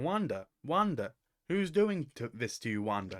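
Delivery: put-on strong American accent throughout. Replicating a voice coming through the radio, very American accent. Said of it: "in a very American accent if I try to replicate".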